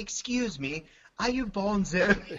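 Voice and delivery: unhurried put-on British accent. Retelling a stranger walking over at breakfast: imitating a british accent. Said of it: "he has a British accent".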